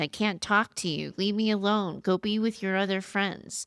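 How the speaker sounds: ordinary talk, nothing marked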